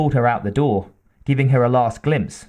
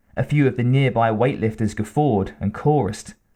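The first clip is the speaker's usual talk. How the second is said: ordinary delivery, nothing marked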